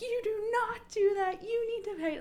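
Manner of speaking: very high, outraged, scolding yell. Retelling a frightening moment, the speaker re-enacts how she was yelling. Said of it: "at that point I'm like yelling".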